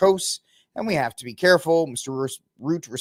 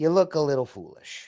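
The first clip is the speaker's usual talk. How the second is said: put-on Southern US accent. Mocking a speaker's argument, talking back to her: put-on Southern voice. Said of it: "I'll hit you with the Southern".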